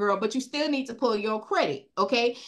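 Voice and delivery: ordinary talk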